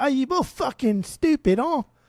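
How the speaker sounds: loud, very high put-on British accent. Imitating a friend weighing in: put-on british accent. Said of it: "we're not even using the right accent".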